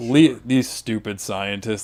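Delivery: put-on sarcastic comedian voice. Retelling how a comedian mocked evolution: imitating David Cross being sarcastic. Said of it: "he'd be so sarcastic".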